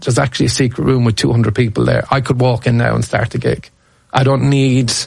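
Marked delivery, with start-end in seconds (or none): none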